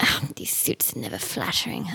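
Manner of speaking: muttering under breath. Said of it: "Selena's just mumbling to herself".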